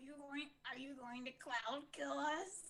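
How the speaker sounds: put-on, soft, hushed goblin voice. Player asking another player a question at the table, goblin voice. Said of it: "What's the goblin voice for?".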